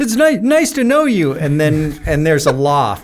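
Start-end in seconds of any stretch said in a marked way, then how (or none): 0.0-1.3 very high-pitched, nervous, jittery, tripping stammer. Retelling a greeting to a man's wife at three in the morning, imitating a very nervous John Lewis. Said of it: "John Lewis is so nervous".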